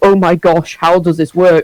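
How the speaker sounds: ordinary talk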